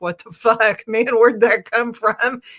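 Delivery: loud, blunt, unpleasant and defensive. Acting out own reaction when someone says something hurtful: imitating own defensive reaction. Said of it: "for me, that's like".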